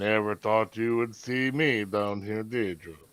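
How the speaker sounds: soft, grumbled mutter half to himself. Stepping on board a boat in a role-play scene: muttering under his breath. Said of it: "mutter under his breath".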